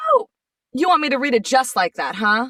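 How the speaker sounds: cheeky, mildly sassy tone. Retelling the answer given to a man's monotone line read: retelling a sassy retort. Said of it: "I got a little sassy".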